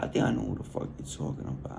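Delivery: fast, hushed whispered aside.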